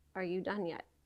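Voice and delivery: quiet, soft, firm and stern rebuke. Retelling what God said while grieving on the couch: imitating a stern, soft voice. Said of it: "the sternest, softest voice".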